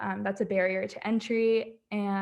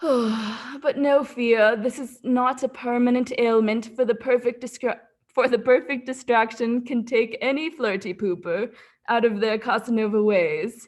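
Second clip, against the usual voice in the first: loud, bad put-on storybook narrator voice and accent; 5 dB louder than usual. Reading out a pre-roll ad's narration: terrible narrator accent. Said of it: "So the narrator goes".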